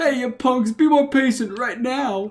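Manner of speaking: mild, scolding holler. Complaining about kids these days, acting out a yell. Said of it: "I wanna stand up and yell".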